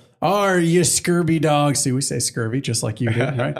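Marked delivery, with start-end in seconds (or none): 0.2-1.8 slow, put-on pirate voice. Asked to demonstrate the voice used to inspire the crew, in a pirate voice. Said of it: "I put on my pirate voice".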